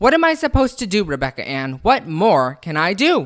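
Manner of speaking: loud, blood-boiling furious outburst. Speaking to Rebecca Ann, boiling with anger. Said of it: "could feel the blood boiling throughout her entire body".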